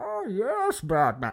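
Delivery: very high-pitched comic supervillain voice. Describing a counterintuitive acting choice: imitating Bane. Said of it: "you end up with a Bane that rather than being like".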